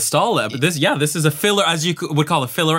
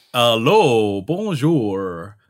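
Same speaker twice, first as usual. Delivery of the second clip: clumsy fake French accent, low voice; 5 semitones lower than usual. Asked by another speaker to try one, the speaker attempts a bad french accent.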